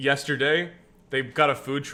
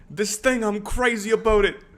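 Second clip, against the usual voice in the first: put-on, pitched-up New York accent; 8 semitones higher, 4 dB louder than usual. Speaker imitating what a woman would say, put-on new york accent. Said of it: "I'm doing a New York".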